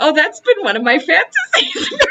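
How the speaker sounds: mock laughing, sputtering. Retelling own reaction when someone did their bit, retelling laughing, choking, sputtering. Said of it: "choking and laughing and sputtering".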